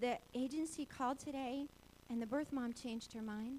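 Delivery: normal talking voice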